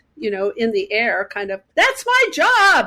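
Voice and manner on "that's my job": put-on, shrill, very high scream. Retelling hanging up the phone after losing a job: retelling a scream. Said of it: "just screaming out to something".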